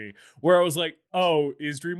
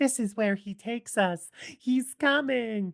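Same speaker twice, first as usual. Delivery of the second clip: put-on creepy, eerie little-girl voice, high and slow; 8 semitones higher than usual. Retelling a little girl's line from a movie: imitating an eerie, creepy little girl. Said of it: "being very eerie and creepy".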